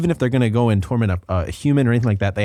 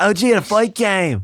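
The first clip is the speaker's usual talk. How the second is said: put-on leprechaun-like Irish accent, higher; 9 semitones higher than usual. Doing an impression that sounds like a leprechaun: Conor McGregor impression. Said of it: "if you sound like a leprechaun".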